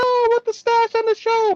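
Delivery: very high, teary, little crying voice. Retelling own reaction to a guest missing the show: imitating own past crying. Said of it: "I was a little crying, like".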